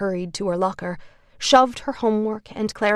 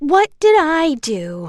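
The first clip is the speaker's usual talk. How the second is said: high, loud, taunting, mocking jeer; 7 semitones higher, 6 dB louder than usual. A student at the back of the classroom mocks another student's complaint: high mocking voice. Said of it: "a high, mocking voice said".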